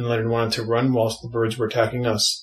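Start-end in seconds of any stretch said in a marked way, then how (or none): none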